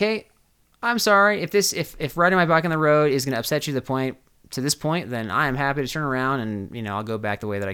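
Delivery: ordinary delivery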